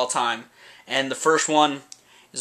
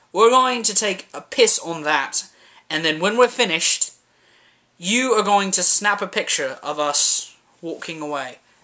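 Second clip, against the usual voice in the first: best-effort put-on English accent; 4 semitones higher than usual. Talking about an album cover, the speaker acts out a scene in an english accent impression. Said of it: "That's my best English impression".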